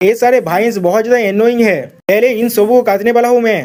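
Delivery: ordinary delivery, nothing marked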